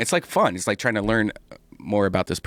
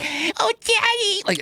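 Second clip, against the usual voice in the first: put-on very high little-girl voice. Describing a girl who talks like a kid only in bed, quoting her: childlike little-girl voice. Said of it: "she doesn't talk like a kid in any other times".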